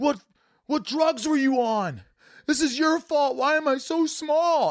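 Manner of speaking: very high, sobbing, furious, tearful outburst. Retelling demanding of parents why they made one small: reenacting an angry crying outburst. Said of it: "storming out of the room and crying".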